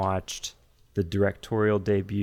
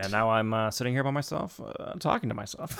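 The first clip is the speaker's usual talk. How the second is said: speedy, hesitant rambling, pausing on uhs; 2 semitones higher, 3 dB quieter than usual. Quoting a Jurassic Park line after talking about doing impressions: Jeff Goldblum impression. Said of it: "I got the Goldblum there".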